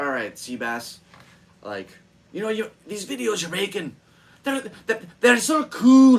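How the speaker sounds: put-on loud, very high, thick Scottish accent. A speaker retells what a man told him, in a thick scottish accent. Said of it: "it's hard to do his thick ass Scottish accent".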